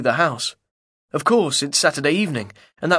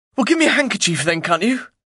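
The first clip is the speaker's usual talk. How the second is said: furious, demanding outburst, pitched up; 6 semitones higher than usual. Narrator, having set down his rifle and pack, speaks to her: furious. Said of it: "Then I say furiously".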